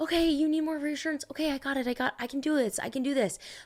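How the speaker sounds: high, eager, people-pleasing voice. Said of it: "leads to empty promises of".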